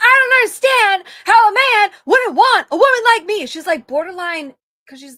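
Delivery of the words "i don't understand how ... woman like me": very loud, booming, lively, pitched-up animated delivery. Retelling a talk show comment in a loud Leslie Jones impression. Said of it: "that's how she says this".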